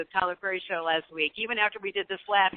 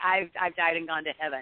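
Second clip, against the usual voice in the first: ordinary talk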